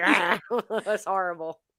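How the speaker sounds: mocking put-on sick-sounding voice like a trach. Mocking a sick friend who sounds like he has a trach: imitating a sick friend's trach voice. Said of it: "He has the trach in his throat".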